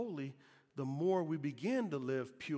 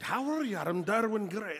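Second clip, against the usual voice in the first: put-on Irish accent; 6 semitones higher, 7 dB louder than usual. Recalling starting to speak in an irish accent and introducing oneself: irish accent. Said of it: "I even began to speak like with a Irish accent".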